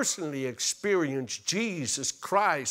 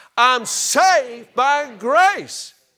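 very loud, slow, drawn-out shout; 9 semitones higher, 10 dB louder than usual. Leading a crowd in a declaration after asking them to shout it: shouting. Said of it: "You have to shout it out".

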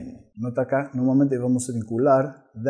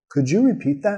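question-like pitch rise on that; 5 semitones higher than usual. Pronunciation lesson, speaker models the question for learners: rising intonation. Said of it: "Tono subiendo".

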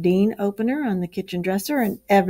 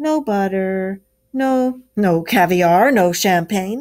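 grinning, louder and slower; 5 dB louder than usual. The rat chimes in after the mole groans, grinning.

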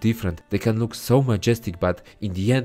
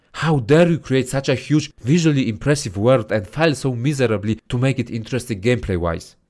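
heated, worked-up, ranting voice; 4 semitones higher, 4 dB louder than usual. Reviewing a game's world, getting heated. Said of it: "I'm getting heated".

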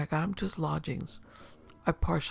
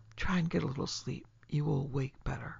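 usual speaking voice

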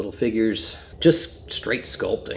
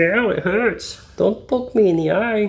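put-on very high, drawn-out, slow tearful crying; 10 semitones higher than usual. Speaker voices a figure whose eyelids are being poked, imitating someone crying. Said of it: "He's crying".

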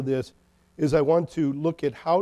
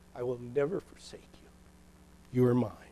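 put-on pleading voice, lower and quieter; 4 semitones lower, 8 dB quieter than usual. Acting out a voice that pleads with frantic, worried people: voicing God pleading. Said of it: "you almost hear God pleading with us".

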